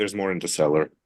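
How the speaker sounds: incredibly bored, uninterested, low voice. Voicing a telepathic reply after bottles break, in an incredibly bored voice. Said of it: "an incredibly bored voice saying".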